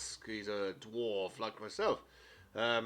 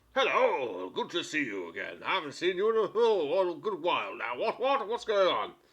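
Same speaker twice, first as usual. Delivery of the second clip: loud, sing-song fantasy dwarf character voice; 6 semitones higher, 7 dB louder than usual. Voicing an old dwarf who greets the players: voicing a dwarf. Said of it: "Old Winnie, the dwarf".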